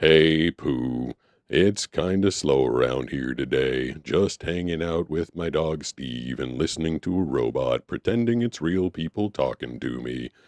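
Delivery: slow, drawn-out put-on character voice. Asked to do a voice impression, answering in Eeyore voice. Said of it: "do a voice impression of Eeyore from Winnie the Pooh".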